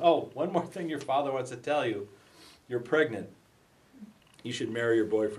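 normal talking voice

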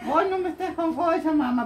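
put-on high, sweet, giggly baby voice.

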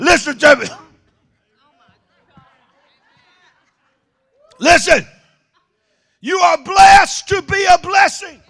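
full-throated preacher-style scream, shouted out hard. Speaker addressing a crowd that won't shout amen, screaming. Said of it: "I'm screaming my guts out".

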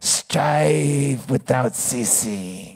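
very deep, stretched-out soft tone. Speaker quoting Buddha's last words, doing a Buddha impression like Jabba the Hutt. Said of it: "It sounded like Jabba the Hutt".

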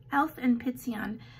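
ordinary talk, nothing marked

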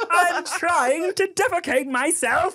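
put-on British accent, very high, very slow, drawn out. Imagining a baby son talking after watching british shows: british accent. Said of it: "busted out with this British accent".

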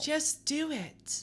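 whispered put-on character voice. Voicing a game character who urges starting a YouTube channel: Grace's new put-on voice. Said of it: "That's gonna be Grace's new voice".

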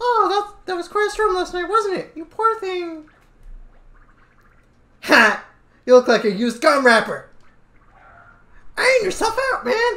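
very high, squeaky little voice, deliberately bad squeak. Streamer voicing Toad during a Mario game, in a shitty Toad voice. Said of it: "my shitty toad voice".

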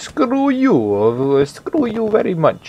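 put-on Russian accent. Speaker voices an on-screen fighter who sounds Russian, in a Russian accent. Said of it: "I don't know why he sounds Russian".

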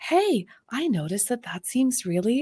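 adorably comforting, reassuring, encouraging tone. Describing how a psychologist friend coaches herself through hard moments, imitating Hillary McBride's comforting voice. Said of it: "She has this really adorably comforting voice".

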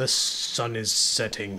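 heavy put-on fantasy voice, dropped low and deep. Playing a game and quoting a line, in a Gimli impression. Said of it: "That was my best Gimli impression".

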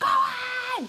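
high-pitched cheering shout.

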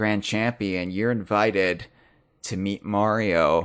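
spooky, creepy, eerie reading voice. Describing a game's invitation letter from the sky, reading it in a creepy voice. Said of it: "less creepy than the way that you just read it".

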